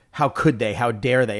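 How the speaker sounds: ordinary delivery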